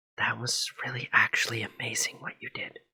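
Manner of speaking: hushed, breathy whisper under the breath. Playing a character in a game, whispering over to another character. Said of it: "I whisper over to you".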